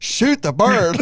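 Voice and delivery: mock frantic, panicked tone, pitched very high. Retelling the bird walking off, urging a shooter: imitating own panicked urging.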